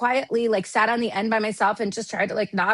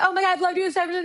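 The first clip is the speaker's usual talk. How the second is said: mock sobbing, much higher, faster; 9 semitones higher than usual. Retelling meeting someone in an industry photo line, imitating own sobbing. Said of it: "I start sobbing because I was like".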